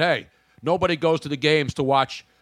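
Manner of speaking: ordinary talk, nothing marked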